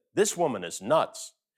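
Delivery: plain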